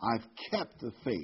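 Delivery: kept stressed hard with a falling close. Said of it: "Let me emphasize that word".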